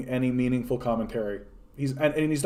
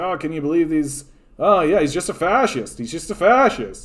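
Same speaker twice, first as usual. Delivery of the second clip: put-on scoffing pundit voice, louder; 3 semitones higher, 4 dB louder than usual. Imitating how Sam Seder leans into the mic and talks: Sam Seder impression. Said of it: "and he talks like this, and he's like".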